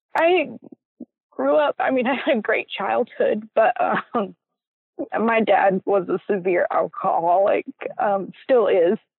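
choked-up voice, audibly emotional. Answering a question about growing up fast, getting emotional. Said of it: "I don't mean to get emotional".

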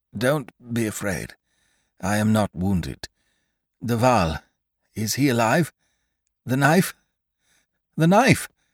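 broken, halting voice breaking up. A fallen count answers his daughter after a moment, in a broken voice. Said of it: "In a broken voice".

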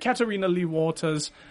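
light British accent on the name. Giving a shout-out to a listener: slight British accent on name. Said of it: "I tried to do a little bit of a British accent there".

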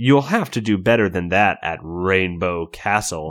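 low, scornful, sneering voice. Narrator reads a character's retort about rainbow castle, sneering. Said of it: "still sneering".

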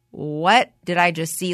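ordinary talk

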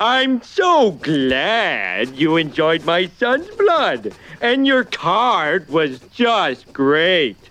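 sarcastic, mock-sincere voice, glad drawn out. A father dictates a letter to Mr. Burns to his son Bart: sarcastic. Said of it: "I'm being sarcastic".

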